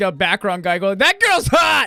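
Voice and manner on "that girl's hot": put-on drunk voice, higher, louder, slower. Recalling Joy drinking in the background of a Let's Play: imitating Joy drunk. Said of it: "He's just drinking".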